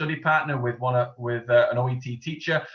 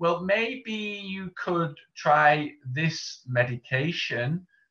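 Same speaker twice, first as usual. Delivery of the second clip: unsure, noncommittal, slow, hesitant delivery; 4 semitones higher than usual. Contrasting with certain wording, demonstrating hedging speech, hesitant and unsure. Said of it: "that is not certain".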